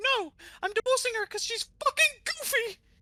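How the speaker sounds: squeaky voice way up high. Telling a courtroom joke, voicing Mickey: Mickey Mouse voice. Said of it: "and Mickey goes".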